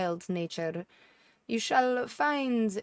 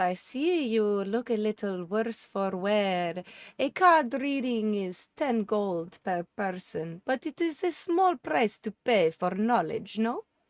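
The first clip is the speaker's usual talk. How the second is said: put-on cat-folk creature voice. Voicing a card reader offering readings for ten gold: sounding like a Khajiit. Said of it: "Sound like a Khajiit".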